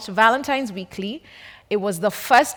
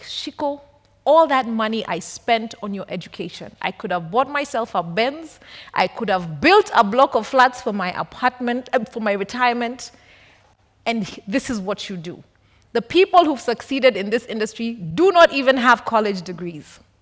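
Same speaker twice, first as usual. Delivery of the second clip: normal talking voice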